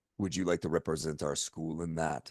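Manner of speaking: very low, very soft, hushed put-on Russian accent. Retelling what a woman at school asked him, imitating a Russian accent. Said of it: "I just heard a Russian accent there".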